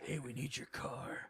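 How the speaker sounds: low, soft, slow, menacing tone.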